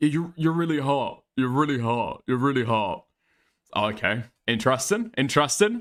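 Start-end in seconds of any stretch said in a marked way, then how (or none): 0.0-3.0 put-on, slightly slurred, mock-drunk speech. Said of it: "slightly slurring his words".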